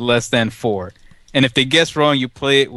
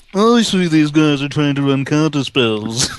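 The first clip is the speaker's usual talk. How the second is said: smug, snooty, uppity, superior voice; 2 semitones higher than usual. Picturing a friend as a snobby Magic player: imitating an uppity player. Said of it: "being the uppitiest dude at the event".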